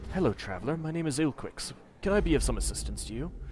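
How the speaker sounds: soft, gentle, very quiet, barely audible murmur. Voicing a man with a flagon of ale greeting a traveler: gentle, barely audible voice. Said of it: "he speaks in a gentle voice, so quiet that you can barely hear his words".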